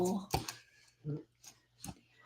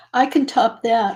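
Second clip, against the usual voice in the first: ordinary talk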